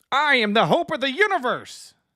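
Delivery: bad, clumsy put-on voice, very high and loud. Describing how the early Goku voice sounded, then trying it: Goku voice. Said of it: "That is not a good Goku, but I'm trying".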